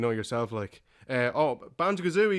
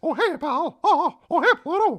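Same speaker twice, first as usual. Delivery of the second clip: high-pitched, loud, squeaky delivery; 6 dB louder than usual. Asked if he does other impressions, speaker performs a Mickey Mouse impression. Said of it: "Mickey, Mickey Mouse".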